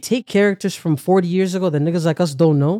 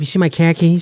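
imitated Boston accent. Explaining how people with a boston accent talk, in a boston accent. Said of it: "It's all just a Boston accent".

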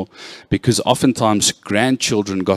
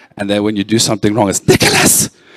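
usual speaking voice

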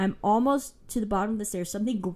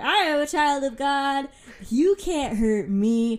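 very slow, drawn-out, loud yelling; 6 semitones higher, 6 dB louder than usual. Retelling how she yelled at something in a dark house, retelling her own yelling. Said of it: "So I just started yelling at it".

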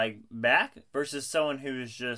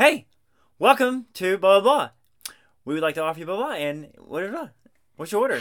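mock cheerful upbeat voice, higher and louder; 6 semitones higher, 6 dB louder than usual. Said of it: "some good vibe".

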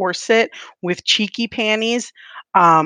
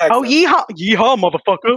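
put-on Texan accent; 4 semitones higher, 3 dB louder than usual. In an improvised role-play, playing a Texan who opens the door: put-on Texan accent. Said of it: "You're a Texas".

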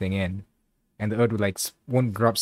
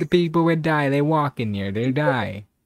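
high, put-on Italian-dude accent throughout; 6 semitones higher, 4 dB louder than usual. Repeating another speaker's line back to him, imitating an italian accent. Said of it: "You just sounded like some Italian dude".

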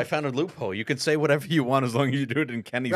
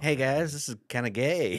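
put-on quieter cartoon child voice; 3 dB quieter than usual. Asked to have Cartman review a commercial, the speaker answers in Cartman voice. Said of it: "I can do a Cartman".

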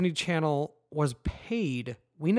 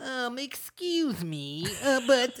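very slow, hesitant, polite, halting voice, pitched up, drawn out; 8 semitones higher than usual. Imitating a nitpicking reader in fake glasses: Conan O'Brien impression. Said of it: "like a Conan O'Brien".

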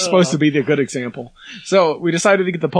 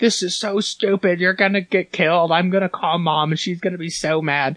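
sharp, scolding tone; 2 semitones higher, 3 dB quieter than usual. Retelling how the speaker's sister came out and yelled at them: retelling a yell. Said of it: "My sister came out and yelled at us like".

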